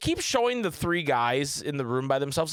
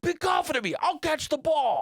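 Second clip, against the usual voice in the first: put-on New York–New Jersey accent, pitched very high; 13 semitones higher than usual. Quoting a guy arguing with the group about the plan, New York–New Jersey accent. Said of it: "this like New York, New Jersey accent".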